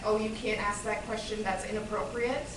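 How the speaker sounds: ordinary talk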